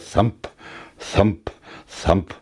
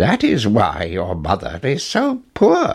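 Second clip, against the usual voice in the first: plain reading voice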